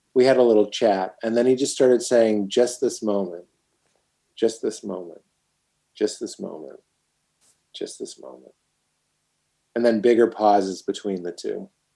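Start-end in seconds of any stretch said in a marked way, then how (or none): 2.5-8.6 quiet murmur, lower and quieter. Retelling a quiet moment beside a teacher: imitating speaking under his breath. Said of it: "almost under his breath".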